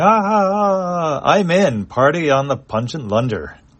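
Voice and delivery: very slow, high, laughing, with a drawn-out "ah". Narrator reads a character replying through a screen, laughing. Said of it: "And Chone is laughing".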